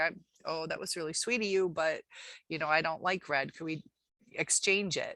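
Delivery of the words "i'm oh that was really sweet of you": ordinary delivery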